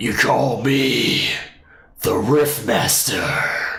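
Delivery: slow, rough, rasping put-on gravelly voice. Trying out a voice after saying it isn't gravelly enough: attempted gravelly voice. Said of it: "a really gravelly, uh, kind of voice".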